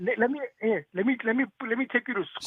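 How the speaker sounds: high, stuttering, stammering repeats with stumbling restarts. Mocking the doctor, mock stuttering. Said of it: "Stop stuttering".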